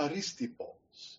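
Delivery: careful, reconstructed classical Greek pronunciation. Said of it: "who's going to give the classical Greek pronunciation".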